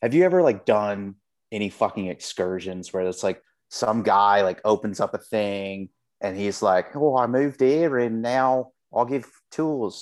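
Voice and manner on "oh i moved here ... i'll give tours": put-on weird Australian accent. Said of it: "he's got a weird accent".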